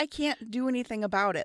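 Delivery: mock frustrated shout, high-pitched yelling. Retelling answering from a kayak: retelling own screaming. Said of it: "screaming at each other down there".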